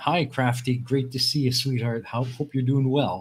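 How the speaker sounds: plain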